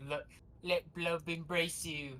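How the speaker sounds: put-on, heavily British delivery, laid on thick. Narrating a character's spoken line during the game, in a very British accent. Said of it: "says in a very British accent".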